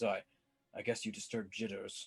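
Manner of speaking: soft muttering under the breath. Narrator voicing a dangerous man passing the broom closet: muttering. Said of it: "he just mutters".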